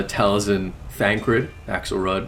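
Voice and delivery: ordinary delivery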